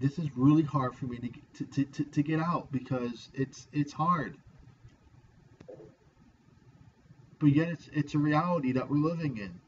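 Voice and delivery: pushing words out while fighting back tears. Speaking of a hard reality, trying not to cry: holding back tears. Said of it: "I'm gonna try not to cry here".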